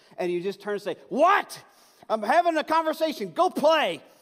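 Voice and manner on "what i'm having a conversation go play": acted-out fed-up, very high, loud exasperated snap. Acting out a parent interrupted by a child: imitating a parent snapping. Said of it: "something in your brain that just breaks".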